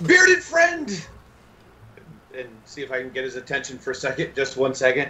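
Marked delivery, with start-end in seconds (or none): 0.1-1.1 high-pitched, loud shouted call. Calling out in character to get a bearded friend's attention: yelling. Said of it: "I am going to yell".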